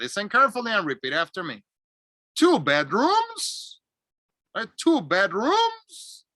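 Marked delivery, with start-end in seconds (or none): 2.4-6.2 rising pitch on the word "right". Showing learners how to check understanding: rising intonation to check understanding. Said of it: "Rising intonation to check understanding".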